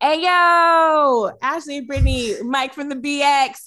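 loud put-on New York accent, drawn-out "yo". Trying an accent after someone gave a British one, in a New York accent. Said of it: "try to call forth my best New Yorker".

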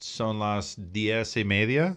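slow, poorly done Spanish accent. Giving the time in Spanish before a commercial break: bad Spanish accent. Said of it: "You don't like my accent?".

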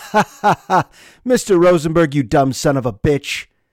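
acted-out mocking, jeering laughter. Teacher retelling students' reply to his question, imitating mocking laughter. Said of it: "they laughed in my face and they said".

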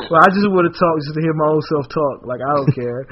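ordinary delivery

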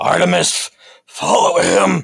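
rough, swooping shout, very high and very loud. Voicing a character who orders Artemis to follow: yelling in character. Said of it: "he looks at it and just yells".

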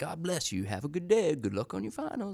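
very high, swooping, sing-song voice. Imitating a man who stood on campus blessing students: imitating a man who blessed passers-by. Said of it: "that's my impression of, uh, of him".

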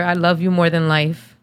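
ordinary delivery

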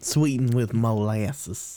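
natural Southern accent. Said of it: "sounded like a true Southern right there".

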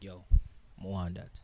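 plain

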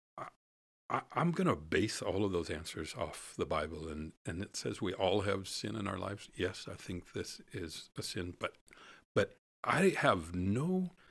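plain

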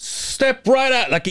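put-on yelled call. Retelling how a man called him over to his cashier; imitating a cashier yelling. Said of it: "He's like yelling".

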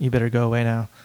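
utterly serious, no joking, acted delivery. Retelling how Brian Anderson told a kid at the van to leave: imitating Brian Anderson, dead serious. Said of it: "the most serious "go away now" I've ever heard".

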